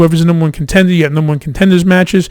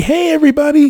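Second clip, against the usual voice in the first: very high-pitched, happy, cheerful voice; 10 semitones higher than usual. Suggesting how the character could enter, imitating Bray Wyatt's happy greeting. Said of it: "He can come out all happy".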